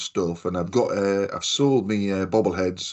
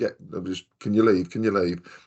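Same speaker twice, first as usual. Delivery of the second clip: ordinary delivery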